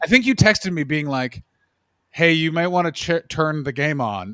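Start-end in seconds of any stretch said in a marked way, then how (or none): none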